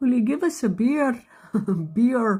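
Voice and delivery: put-on Irish accent. Retelling a guy at the bar asking for a beer, imitating Irish accent. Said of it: "It's Irish".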